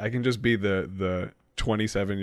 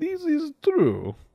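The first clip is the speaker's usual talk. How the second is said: put-on very high-pitched voice with Russian accent. Speaker shows how they answer people, using a Zoya the Destroyer Russian accent. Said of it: "especially in a Russian accent".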